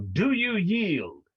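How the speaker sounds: high, challenging yell in a character voice. Demanding an enemy's surrender in character: yelling in character. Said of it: "and I will yell".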